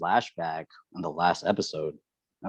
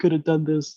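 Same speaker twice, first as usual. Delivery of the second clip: mock tearful sobbing, very high, crying; 10 semitones higher than usual. Picturing a character's reaction in the discussion, imitating Armin crying. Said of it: "I could just see Armin crying like".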